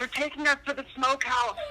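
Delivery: mock, high-pitched shouting yell. Retelling a movie scene where a captive grabs someone's ankle: imitating a yell. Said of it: "by the ankle and yells".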